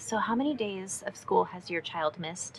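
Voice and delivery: very quiet, hushed, barely audible whisper. Retelling a question put to a friend at school: imitating a whisper. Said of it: "I kind of whispered to her".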